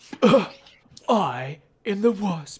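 very slow, stretched-out put-on British accent. Imagining her reply when mistaken for Courtney Cox, Evangeline Lilly impression, British accent. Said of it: "that's my impression of Evangeline Lilly. / Very offended and apparently with a British accent".

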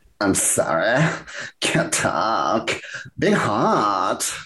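very slow put-on drawl, "hot" stretched out. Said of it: "Is that a [name] impersonation? That's exactly, yes".

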